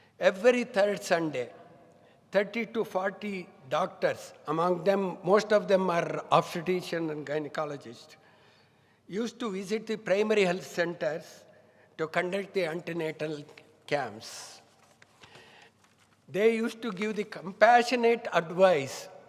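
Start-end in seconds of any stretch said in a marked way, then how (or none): 16.3-19.1 word "compassionate" stressed, pressed out louder. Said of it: "I underline the word compassionate".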